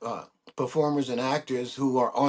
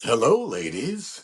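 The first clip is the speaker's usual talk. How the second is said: put-on gruff bulldog voice; 3 semitones lower than usual. Showing the voice of the bulldog played in a commercial: bulldog voice. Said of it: "he says things like".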